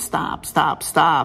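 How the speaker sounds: loud shouting.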